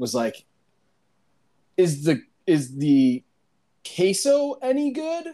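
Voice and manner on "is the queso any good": play-acted very slow, cautious, half-hesitating, pitched up. Retelling a teammate ordering from the server: imitating a cautious, hesitant question. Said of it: "very cautiously or like almost hesitating".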